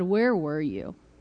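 disrespectful, rude tone, very low voice. Recounting speaking to God in a meeting, retelling a rude question. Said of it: "in a very rude voice".

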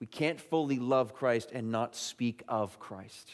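slow, measured, weighted, deliberate preacher-like emphasis. Speaking to listeners, after announcing you will say this slowly: said slowly. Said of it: "I'm going to say this slow".

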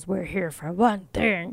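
full growl voice, growling delivery. Narrating a story, the speaker voices a companion in the dark with a growl voice. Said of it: "That's my growl voice".

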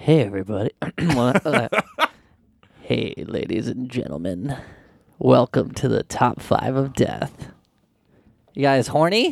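put-on seductive tone, low and sultry. Welcoming everyone to the episode after being asked for it: put-on sultry voice. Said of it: "Give it your sultry best".

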